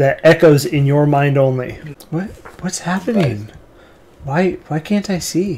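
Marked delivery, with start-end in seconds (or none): 2.6-5.6 put-on small, soft, girlish young girl's voice. Narrator voicing a young girl heard only in a listener's mind: young girl's voice. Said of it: "you hear the voice of a young girl".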